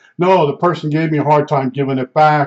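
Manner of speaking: ordinary talk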